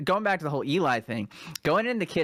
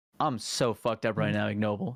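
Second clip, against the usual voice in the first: mock utterly serious, composed, calm, low voice; 5 semitones lower than usual. Retelling what a friend said during the party: imitating a serious, calm voice. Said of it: "the most serious, calm voice".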